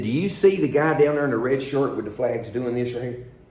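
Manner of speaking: ordinary talk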